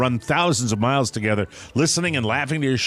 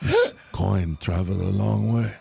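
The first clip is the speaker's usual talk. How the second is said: put-on low, creaky, rough voice; 5 semitones lower than usual. Quoting a line from No Country for Old Men as a Javier Bardem impression. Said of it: "No Country for Old Men voice".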